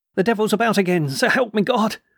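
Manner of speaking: thin, high, terrified cry. A man running about in circles cries out, thin, terrified voice. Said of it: "he cried in a voice thin with terror".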